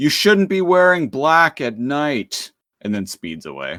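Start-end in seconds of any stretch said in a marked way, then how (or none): 0.0-2.5 loud, high-pitched put-on yell. Retelling what a driver yelled out after hitting them: imitating a driver yelling. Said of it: "yells out".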